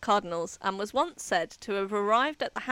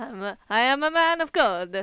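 put-on vampire voice; 5 dB louder than usual. Voicing a fasting man of God, the voice slipping into a Dracula voice. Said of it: "That was more like Dracula".

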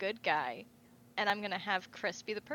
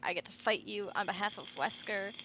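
thrilled, gushing, excited and eager voice. Retelling a character meeting her rival: imitating an excited character. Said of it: "she's all excited 'cause she's like".

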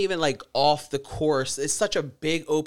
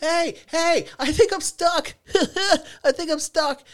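mock, very high, drawn-out holler across a distance; 13 semitones higher, 4 dB louder than usual. Retelling how a stuck kid called out: imitating someone yelling. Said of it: "yelling at me".

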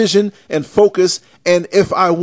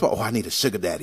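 put-on under-breath mutter, much lower, quieter; 10 semitones lower, 10 dB quieter than usual. Mocking people who come with sob stories: mock under-breath mutter. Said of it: "And then under their breath".

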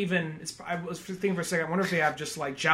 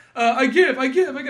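halting, high, loud, stuck-on-repeat stammer; 8 semitones higher, 6 dB louder than usual. Retelling a movie scene where a character speaks english: imitating someone stammering. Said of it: "He's stammering".

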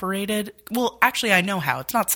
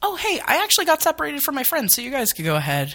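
put-on very high, sing-song, overly sweet politeness; 9 semitones higher than usual. Recounting telling the people behind her she got separated, acting out saying it so nice. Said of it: "I literally said it so nice".

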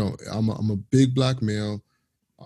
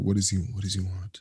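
imitated whispering; 2 semitones lower, 3 dB quieter than usual. Retelling what a sales associate said at the cashier desk: imitating someone whispering. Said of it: "I can hear her literally whisper".

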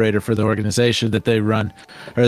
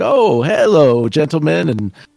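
put-on polite gnome voice, higher and slower; 6 semitones higher, 4 dB louder than usual. Describing a game's beloved gnome NPC, giving his greeting in a put-on polite gnome voice. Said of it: "always cordial, always polite".

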